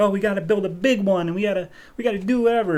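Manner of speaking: mock excited little boy voice. Retelling a comic scene where the young boy is excited: imitating someone excited. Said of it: "he's all excited".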